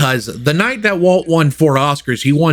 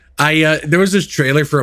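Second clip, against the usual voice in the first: usual speaking voice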